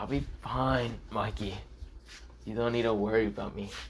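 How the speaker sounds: weak, faint, dying-sounding voice.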